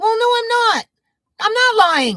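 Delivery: very high, swooping voice. Retelling his denial to someone accusing him of lying: voice getting a little higher. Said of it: "my voice getting a little higher".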